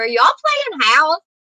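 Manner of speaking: put-on screaming. Retelling calling out from the bathroom to family: retelling a scream. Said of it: "I was screaming at 'em from the bathroom".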